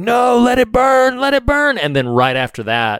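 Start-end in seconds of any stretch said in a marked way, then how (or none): 0.0-1.8 put-on scream, much higher and slower. Describing a movie scene, imitating Jamie Lee Curtis screaming at them. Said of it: "she starts screaming at them like".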